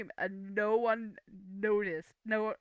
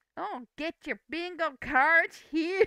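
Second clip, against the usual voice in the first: very fake, high, loud Americanized dubbed-cartoon accent; 7 semitones higher, 5 dB louder than usual. Retelling how the bingo call sounded, in a very fake americanized accent. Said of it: "very very fake Americanized accent".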